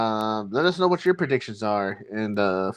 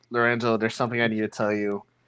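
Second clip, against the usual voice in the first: ordinary talk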